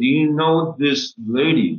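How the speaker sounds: acted whisper. Retelling asking a friend about a stranger at the table: retelling a whisper. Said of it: "I whispered to my friend".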